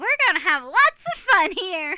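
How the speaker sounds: very high, loud, bouncing hyper voice. Playing Alistair right after Adrian introduces him to the students, in Alistair's high-pitched hyper voice. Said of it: "his is a more high pitched, uh, hyper voice".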